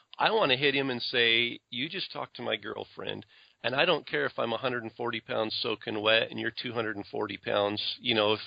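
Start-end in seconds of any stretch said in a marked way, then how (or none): none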